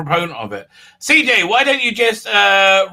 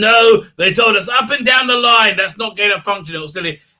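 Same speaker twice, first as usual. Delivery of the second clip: put-on New York accent; 3 semitones higher than usual. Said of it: "Fauci is very New Yorkie".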